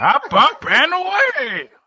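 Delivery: bad robot voice, very high, loud and swinging. Doing your only impression for the others, a bad Powerglide impression. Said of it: "That's not a very good".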